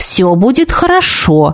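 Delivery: ordinary delivery, nothing marked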